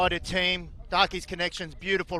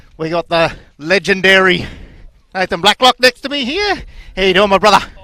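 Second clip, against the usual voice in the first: very loud, breathless, out-of-breath voice; 18 dB louder than usual. Commentating at a tournament, introducing a guest: out of breath. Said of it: "While I try and catch my breath here".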